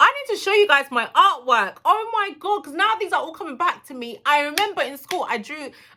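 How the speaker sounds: very high, thrilled, excited shouting. Recalling her school artwork to the audience, excited shouting. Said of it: "I don't know why I'm shouting".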